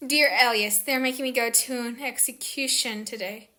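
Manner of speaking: usual speaking voice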